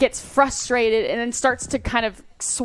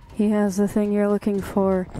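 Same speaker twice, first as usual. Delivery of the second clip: hushed, crackly whispering voice. A game narrator voices a thing suddenly speaking to the players: wispy, crackly whisper. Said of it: "this kind of this wispy, kind of crackly whisper of a voice".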